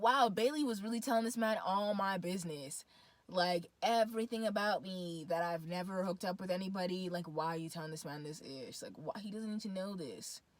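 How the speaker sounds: ordinary talk, nothing marked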